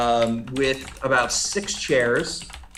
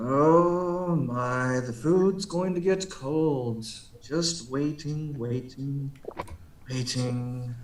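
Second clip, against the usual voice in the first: very slow, drawn-out wizard drawl, long "oh"; 4 dB quieter than usual. Voicing the wizard's voice calling out to the resting party: voicing the wizard. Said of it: "you do hear the voice come back again".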